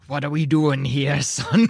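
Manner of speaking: low, hushed voice. Narrating a game, Captain Belparum steps out behind the player: whispering as Captain Belparum. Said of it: "You hear her whisper".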